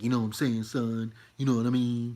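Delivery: loud, swaggering, put-on New York street accent. Contrasting their own regular voice with an exaggerated one: mock new york bravado. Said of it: "I'm not trying to sound like I'm from New York".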